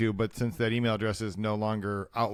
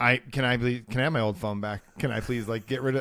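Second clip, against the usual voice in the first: usual speaking voice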